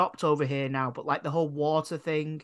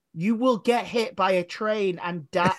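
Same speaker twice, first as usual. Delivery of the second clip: mock, slow, drawn-out shouted holler; 4 semitones higher, 3 dB louder than usual. Retelling what a man on a train platform yelled, imitating his shouted warning. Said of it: "this guy is literally shouting".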